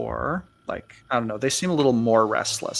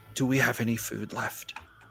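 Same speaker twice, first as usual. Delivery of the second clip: soft, half-whispered voice; 5 dB quieter than usual. A game master voices a character who walks over to you, half-whispering. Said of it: "he's going to kind of whisper".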